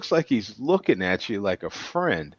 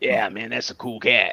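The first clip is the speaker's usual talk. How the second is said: cool-cat put-on radio DJ delivery. Reacting to the name Ringo, in a Wolfman Jack voice. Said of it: "you got to say it like Wolfman Jack".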